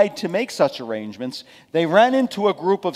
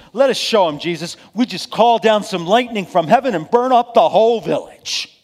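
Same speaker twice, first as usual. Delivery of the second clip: higher, louder angry voice. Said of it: "In anger".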